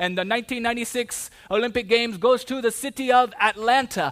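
put-on Spanish-accented announcer voice. Retelling the 1996 olympic host announcement, imitating the announcer with a spanish accent. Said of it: "he had a Spanish accent".

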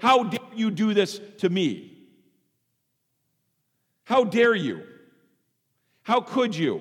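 high, loud, accusing outburst. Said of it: "in a simply accusatory way to say".

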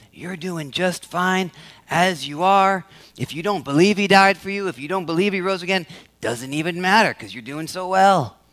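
put-on whispering tempter voice. Voicing the lie of commendation, imitating Satan whispering. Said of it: "This is where Satan whispers in our ears".

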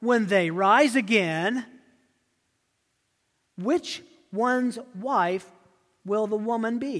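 acted dripping sarcasm. The speaker acts out the questioners' trick question to him, retelling a sarcastic question. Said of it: "that was dripping with sarcasm".

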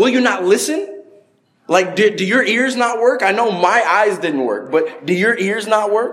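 mocking, sarcastic tone. Acting out the blind beggar answering the religious leaders: acting out a sarcastic reply. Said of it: "this guy's being purely sarcastic".

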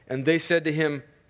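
ordinary delivery

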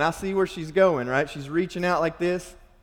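ordinary talk

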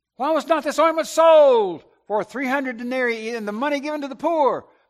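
loud, stretching out "sold". Retelling Judas's response to Mary anointing Jesus, in a loud voice as Judas. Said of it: "I can almost hear him in a loud voice".

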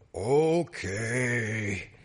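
put-on god voice, deep and dropped. Retelling how a boy answered his own prayer, deepened voice as God. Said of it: "Christopher deepened his voice and went".

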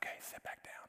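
quiet, breathy, hushed, near-silent whisper. Telling a joke about a sermon, he tells the congregation to sit down, quietly. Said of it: "he quietly says".

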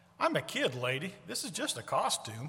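put-on, very matter-of-fact, plain no-nonsense delivery. Retelling a costumed boy's answer to a lady, retelling a matter-of-fact reply. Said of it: "in a very matter of fact voice".

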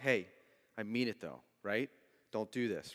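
strict, stern, fatherly laying-down-the-law tone. Acting out a dad warning his child: imitating a stern dad. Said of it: "he kinda looks at you with that stern look".

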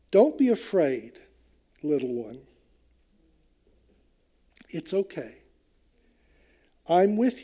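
soft, almost whispering. Reading a verse as a comforting word to a little one: Jesus almost whispering lovingly. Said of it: "he's almost whispering to us".

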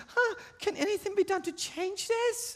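put-on high little girl voice. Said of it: "in your little girl voice".

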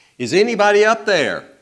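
very loud, very high-pitched calling yell. Telling a joke, voicing someone dangling from a branch: yelling out. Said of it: "and he yells out".

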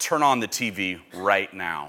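put-on low, quiet, urgent, insistent, emphatic delivery. Recalling the father's morning phone call, the speaker retells his words in an emphatic tone. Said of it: "with the most emphatic tone in his voice".

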